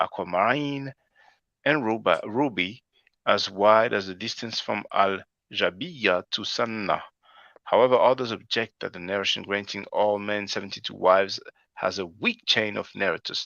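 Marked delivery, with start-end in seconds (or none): none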